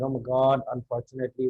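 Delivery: sad, gloomy, depressed-sounding tone. Showing how a phrase sounds when you feel blue: sad, gloomy tone. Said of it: "you sound like that".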